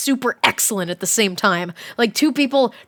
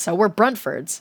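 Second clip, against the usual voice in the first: plain reading voice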